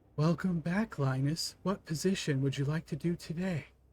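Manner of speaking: disembodied voice from everywhere. Voicing an unseen voice greeting a player in a locked room: disembodied voice from all around. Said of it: "you hear a voice suddenly seems to emit from all around you".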